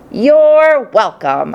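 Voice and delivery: tiny, squeaky little hamster voice. A caged narrator replies to the man who just gave thanks, squeaking. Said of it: "I squeaked".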